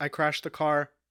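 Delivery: ordinary talk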